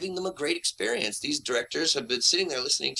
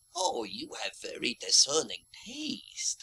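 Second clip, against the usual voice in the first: put-on wizened, ancient old man character voice, pitched up; 6 semitones higher, 4 dB quieter than usual.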